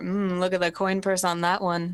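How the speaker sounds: conspiratorial, secretive half-whisper. In the scene, the character leans over to Saturn, half-whispering. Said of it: "Saturn and I whisper".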